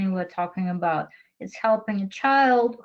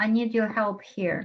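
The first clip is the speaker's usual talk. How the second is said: ordinary talk, nothing marked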